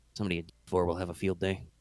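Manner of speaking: barely audible, low, hushed mutter. Imitating how a colleague mutters to himself, imitating his muttering under breath. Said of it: "I'm trying to do a little sort of voce mutter".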